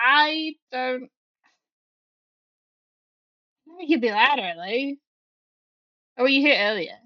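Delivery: sulky, put-out, pouting grumbling voice. Voicing a character who has stopped moving: pouting character voice.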